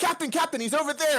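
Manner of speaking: put-on sudden eager excitement, like a kid. Describing snapping from low and sad to excitement, sudden excitement like a kid. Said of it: "I'm gonna snap to excitement and be like".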